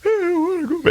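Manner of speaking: acted very high crying. Retelling asking mom, at about eleven, to go back: imitating own past crying and moaning. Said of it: "I'm crying and I'm moaning".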